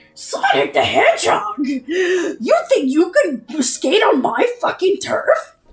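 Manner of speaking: very slow, high character voice, every word drawn out. Imitating Jet the Hawk calling out Sonic: Jet the Hawk voice. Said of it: "that's what he sounds like".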